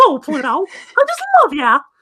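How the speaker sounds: pitch rising way up high, then swooping. Showing how people usually do the impression: Mickey Mouse voice. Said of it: "a lot of people who do the impression go up here all the time".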